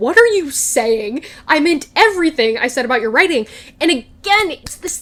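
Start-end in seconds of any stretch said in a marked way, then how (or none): 0.0-3.5 put-on angry tone. Retelling her reply to his doubt about her praise: imitating her getting mad. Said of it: "I do like that she gets mad here".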